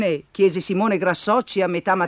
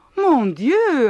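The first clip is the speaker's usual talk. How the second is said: gasping, much higher pitch; 6 semitones higher than usual. Reading a story aloud, voicing the French teacher as the machine swallows teachers, gasping. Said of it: "ansimò il maestro di francese".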